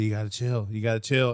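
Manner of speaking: put-on flat, emotionless voice. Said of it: "his deadpan face, no mo- no emotions".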